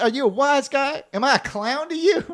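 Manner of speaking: exaggerated, very high-pitched New York accent. Doing an impression, in an over-the-top New York accent. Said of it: "very over the top, top New York".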